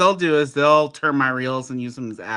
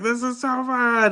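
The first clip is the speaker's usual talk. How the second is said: put-on play-acted very high, drawn-out squealing child scream; 11 semitones higher than usual. Retelling a daughter on a ride: imitating a child screaming.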